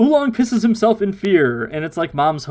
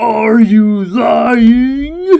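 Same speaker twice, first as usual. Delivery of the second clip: put-on dumb giant voice, higher and louder; 8 semitones higher, 7 dB louder than usual. Retelling a scene where the Ox King gets close: dumb Ox King voice. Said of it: "this great, dumb voice".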